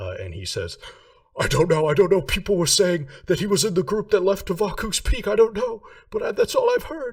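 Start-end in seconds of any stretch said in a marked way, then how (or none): 1.4-7.1 shrill, frantic, rattled-off, very high and loud. A captive kicking to break free answers a shouted demand: frantic. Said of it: "Bo is frantic now".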